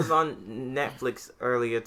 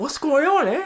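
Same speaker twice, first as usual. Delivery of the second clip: loud, high-pitched, exaggerated, laid-on Boston accent; 5 dB louder than usual. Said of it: "he never had the exaggerated Boston accent".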